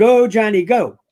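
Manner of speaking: usual speaking voice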